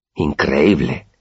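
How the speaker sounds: amazed, marveling, astonished. Willem, one of the narrator's two friends, breaks the silence, amazed. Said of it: "dijo Willem maravillado".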